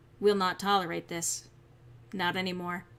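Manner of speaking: calm, controlled angry tone. Addressing everyone listening to this video: calm anger. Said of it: "This is a very calm anger".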